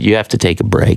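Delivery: ordinary talk, nothing marked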